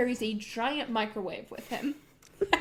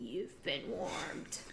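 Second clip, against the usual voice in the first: horrible, whispered, put-on bully voice; 7 semitones lower, 12 dB quieter than usual. Voicing a microwave bully character: horrible put-on bully voice. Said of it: "That's a horrible voice".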